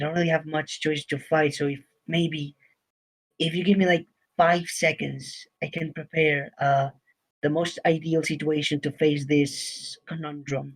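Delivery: low, hushed, secretive half-whisper. Speaking in character to the group before a fight: half-whispering. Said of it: "I'm pretty much me-, whispering at this point".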